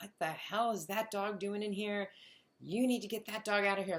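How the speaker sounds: put-on half-yelled, high, mild scolding tone. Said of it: "people started yelling at me".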